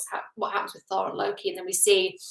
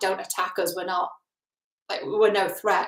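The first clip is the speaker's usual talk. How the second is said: ordinary talk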